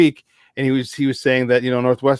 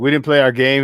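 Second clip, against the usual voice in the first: normal talking voice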